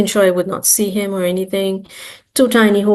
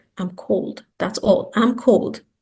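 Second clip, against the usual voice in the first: hushed, soft, breathy whisper; 3 dB quieter than usual. Retelling an answer to someone asking what was wrong: imitating a past whisper. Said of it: "And I just whispered".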